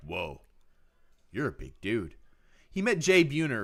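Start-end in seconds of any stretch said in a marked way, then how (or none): 0.0-2.1 acted, wowed, surprised, amazed exclamation. Retelling what dad said on meeting a big athlete: imitating dad amazed. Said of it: "And he was like".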